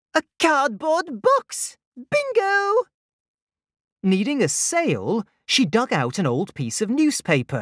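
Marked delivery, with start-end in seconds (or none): 0.1-2.8 very high, drawn-out, delighted gasp. Sifting through scrap, she finds something, gasping with delight. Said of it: "Flamingo gasped with delight".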